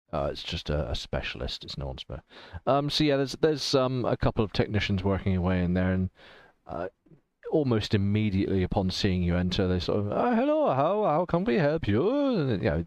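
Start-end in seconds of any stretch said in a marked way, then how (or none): 10.1-12.5 very high, slow, bad put-on German accent. Narrator voicing technicians greeting a newcomer who enters, in a bad German accent. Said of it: "the usual bad German accent I like to roll out".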